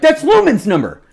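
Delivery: put-on very high, loud, excited shouted yell. Retelling how the dad yelled about a raffle number: imitating dad yelling. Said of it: "he's yelling that".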